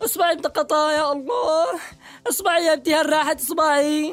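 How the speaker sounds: frantic, panicked, flustered, alarmed outburst. In a sketch, hitting a finger while hammering a nail, panicked. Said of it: "اقول لك اهدى قليل".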